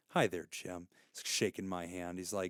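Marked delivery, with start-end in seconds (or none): 0.2-0.9 smooth salesman voice, very deep, quiet and poised. Retelling how a salesman greeted him and shook his hand, imitating a poised salesman. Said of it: "he seems like just so poised".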